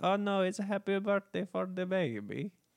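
put-on Russian accent. Recreating how the people in the building sounded, in a put-on Russian accent. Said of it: "pitch perfect recreation of how they".

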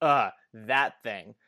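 mock cheeky, sassy, offhand tone. Retelling a character's comment on a drink order: imitating a sassy comment.

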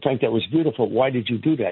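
plain

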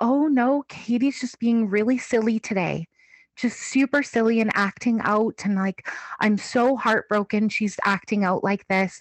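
put-on, very calm, cool, composed tone. Retelling what mom told the auntie: imitating a very calm manner. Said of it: "calm as a cucumber".

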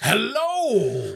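put-on guttural cartoon-bear growl. Podcast co-host greets listeners at the show's start in a guttural cartoon bear voice. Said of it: "says [name] in a guttural voice that would scare a child".

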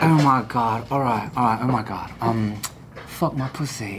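put-on raspy, husky British accent. Retelling how friends got a British woman to say dirty things, raspy British accent. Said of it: "raspy, like, British accent".

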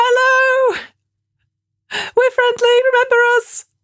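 friendly yell, pitched very high. A player calls out to a sneering kobold at the front of the ship, shouting. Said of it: "start shouting that you're friendly".

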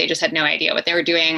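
normal talking voice

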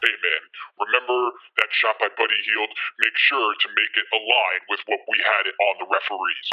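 deep, very low, menacing and ominous voice. Imagining a phone call to a low-level staffer about a scoring error, mock-ominous tone. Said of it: "with a very ominous tone of like".

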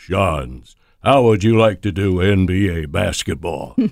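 low, deep bass delivery. Retelling Harry's phone call about an NBA job, imitating Harry's deep bass voice. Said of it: "in his deep bass voice".

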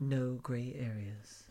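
sultry, put-on sexy announcer-style delivery. Show intro, saying the show's name in a put-on sexy voice. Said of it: "I did that in my sexy voice".

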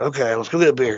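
ordinary talk

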